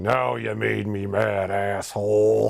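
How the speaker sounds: very slow, creaky, rough put-on voice, words drawn out. Retelling a dubbed villain's line about being taken out: Uncle Phil voice. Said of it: "in the Uncle Phil voice".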